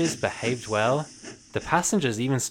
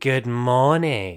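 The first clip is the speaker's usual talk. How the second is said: smooth, oily purring voice; 3 dB louder than usual. Narrator voicing Diesel as he greets Duck, in Diesel's oily purr. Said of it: "purred Diesel in his oily voice".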